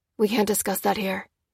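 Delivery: ordinary delivery, nothing marked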